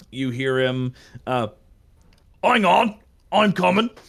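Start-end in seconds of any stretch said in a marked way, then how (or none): 2.4-3.9 put-on orc character voice. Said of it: "he's a fucking forty K orc voice".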